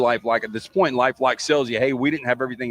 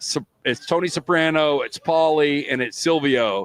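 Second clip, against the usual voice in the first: ordinary talk, nothing marked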